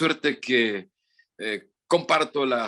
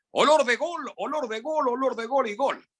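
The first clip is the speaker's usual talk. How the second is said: very high sports-commentator call; 13 semitones higher than usual. Remembering great football narrators, doing a Petronio goal call impression. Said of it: "O Petronio".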